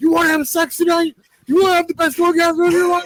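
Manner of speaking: very high, manic, crazed hype voice. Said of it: "he sounds insane".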